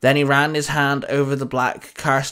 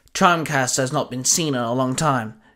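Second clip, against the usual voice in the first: plain reading voice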